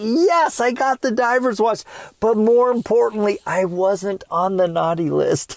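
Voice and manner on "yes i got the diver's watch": mock excited, high, joyful cry of utter delight. Retelling finding the diver's watch on the tree: imitating own past joy. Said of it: "utter joy and excitement".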